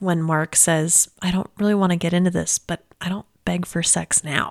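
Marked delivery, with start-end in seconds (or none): 1.2-4.5 mock-whispered, put-on whisper. Recalling a favorite line from the episode, the speaker imitates a whisper. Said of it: "he's like whispering it".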